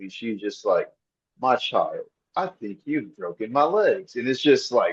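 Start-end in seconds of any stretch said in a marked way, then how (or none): 1.4-4.2 unsettling, creepy possessed-woman horror-film voice. Retelling a movie scene where an old woman crawls after someone: creepy Violet voice. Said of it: "creepy as fuck".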